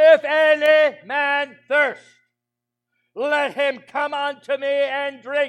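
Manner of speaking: loud, high, ringing preaching cry at full volume. Preacher quotes Jesus crying out at the festival, acting out a loud cry. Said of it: "He raised his voice".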